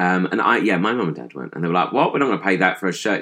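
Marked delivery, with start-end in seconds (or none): none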